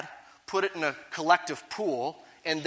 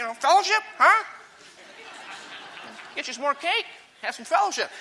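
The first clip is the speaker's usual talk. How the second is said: churchy-sounding voice; 9 semitones higher than usual. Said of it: "you got to use that kind of Baptist-y voice as you do it".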